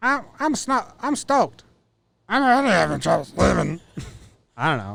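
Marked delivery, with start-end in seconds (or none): 0.0-3.8 put-on gravelly voice, much higher and slower. Repeat a press conference quote in his voice, as a gravelly, high-pitched Gerrit Cole impression. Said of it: "It's like gravelly and high pitch".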